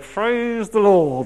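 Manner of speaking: forced, through gritted teeth. Acting out what we all say when the Lord's gift is a £250 beam: acting out praise through gritted teeth. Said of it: "through gritted teeth".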